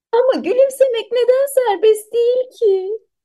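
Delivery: very high-pitched, giggly, laughing voice. Narrating a character's question to the king, laughing while asking. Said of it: "diye gülerek sordu".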